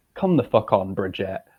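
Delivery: strong, very British-sounding accent. Reacting to a gown while podcasting, exclaiming at Bridget: sounding very British. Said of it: "I've never sounded more British".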